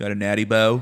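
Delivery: put-on Baltimore-sounding accent. Imitating a stranger calling out on the street: Baltimore accent. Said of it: "the Baltimore Philly accent".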